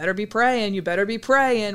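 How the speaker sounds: heavy, very slow, deep Southern drawl. Describing a movie scene, quoting a girl smoking after youth group, deep Southern accent. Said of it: "with like that deep Southern accent".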